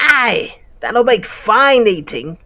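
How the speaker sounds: very high, loud, squeaky spider voice. Reading a story aloud, voicing one of the spiders, in a spider voice. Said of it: "Is that right for a spider voice?".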